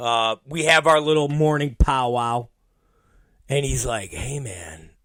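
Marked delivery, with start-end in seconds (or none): 4.1-4.8 soft, low, nice, caring voice. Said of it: "with this nice, caring voice".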